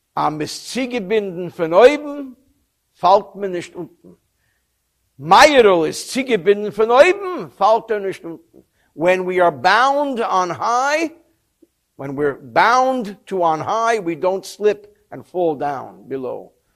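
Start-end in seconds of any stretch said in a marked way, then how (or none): 0.2-8.7 Yiddish-inflected delivery. Retelling a man's answer to younger climbers, imitating Meirul's Yiddish accent. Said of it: "he said in his Yiddish accent".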